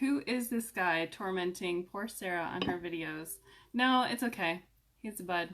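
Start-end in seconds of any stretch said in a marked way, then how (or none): none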